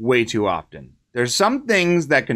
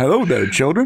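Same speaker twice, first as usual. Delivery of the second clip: mechanical robotic voice; 2 semitones higher than usual. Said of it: "robot sounded like, um, [name]".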